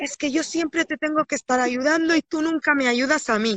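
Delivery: sudden, tearful, crying, boiling-over outburst. Retelling a scene where a child explodes at the father: imitating an exploding outburst. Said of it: "el niño explota en un momento y dice".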